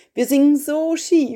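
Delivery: high, loud, lamenting, complaining tone.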